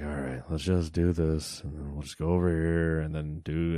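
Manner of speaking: flat, droning, level, unvaried monotone. Retelling own calls during a raid in WoW: imitating own monotone delivery. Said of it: "and it's just all monotone".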